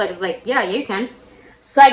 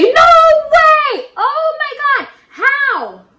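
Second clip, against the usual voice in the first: mock very high, very slow shout, stretched way out; 5 dB louder than usual. Telling how friends reacted to the news: imitating friends yelling. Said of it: "And they were like".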